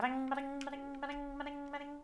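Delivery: high-pitched cartoon dinosaur voice. Doing a favorite noise the character makes: Yoshi voice. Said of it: "That's my favorite noise Yoshi makes".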